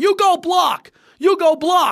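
high-pitched, loud screaming. Describing a video of a quarterback yelling at his offensive line, retelling Peyton Manning screaming. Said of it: "he's screaming at the offensive line".

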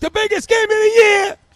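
mock very high, loud, hyped-up excited yell. Act out how he talked about the game, imitating Stu yelling. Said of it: "you can hear him in his pitch".

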